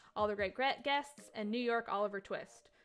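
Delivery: ordinary delivery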